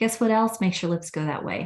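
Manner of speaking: plain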